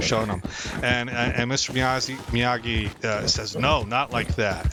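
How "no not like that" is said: usual speaking voice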